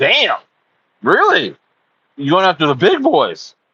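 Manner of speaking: voice cracking and breaking mid-line. Retelling own reaction to the dev's plan: retelling a voice crack. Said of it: "My voice cracked".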